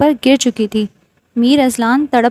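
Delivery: plain reading voice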